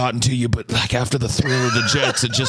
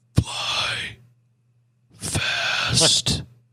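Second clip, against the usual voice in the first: soft whisper under the breath; 4 semitones higher, 3 dB quieter than usual. Retelling a scene, the speaker acts out a friend leaning in close, retelling Goose's whisper. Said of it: "Goose whispers like".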